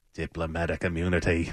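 soft, low put-on Afrikaans South African accent.

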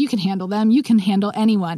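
normal talking voice

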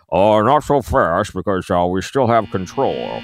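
slow put-on voice, every word drawn out. Imitating a senator replying to a relief bill: Mitch McConnell impression. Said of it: "I do a pretty good Mitch McConnell".

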